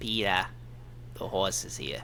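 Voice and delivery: soft, gentle put-on cartoon mother voice. Asked by a friend to do a good Lois, the speaker does a Lois impression. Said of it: "Do a good Lois".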